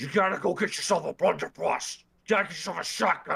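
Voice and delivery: put-on very growly, heavy German accent. Quoting what his dad says to him, in a very growly German accent. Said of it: "his very growly Kraut accent".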